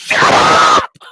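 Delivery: unhinged, very loud shout. Speaker retells losing it at a woman over a lost burger: retelling an unhinged shout. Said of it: "I just let out an unhinged shout".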